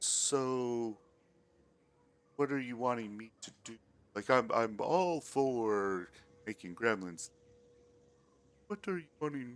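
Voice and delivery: manly character voice, the word so stretched. Voicing a character asked to help with the creatures: very deep character voice. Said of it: "very deep voice".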